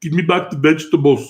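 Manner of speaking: put-on Austrian-accented voice. Imitating how Arnold Schwarzenegger talks to his mule: Arnold Schwarzenegger impression. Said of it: "Have you done that impression in front of him?".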